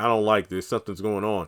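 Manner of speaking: ordinary delivery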